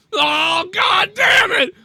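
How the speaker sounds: very high, long, stretched-out shriek. Listing the twelve deaths of Christmas, imitating Tommy screaming. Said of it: "Five Tommy screaming".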